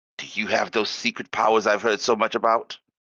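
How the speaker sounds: hushed, secretive half-whisper. Playing a character who leans in to ask a merchant: half-whispering in character. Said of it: "she, like, whispers".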